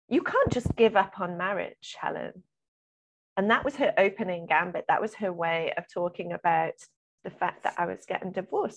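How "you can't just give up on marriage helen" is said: quite angry, aggressive, accusing scolding tone. Retelling a neighbour's remark on a walk: imitating an angry voice. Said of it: "saying in quite an angry voice".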